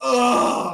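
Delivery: huge, very loud, high fed-up groan. Retelling own reaction to a movie line: retelling a loud groan. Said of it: "the loudest groan I could ever give".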